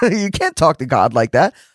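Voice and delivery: laughing, amused, mocking tone.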